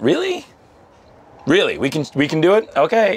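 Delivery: amazed, incredulous disbelief, very high and swooping. Speaker teasing someone about her side losing: impression of a Minuteman. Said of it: "I always do my impression of a Minuteman".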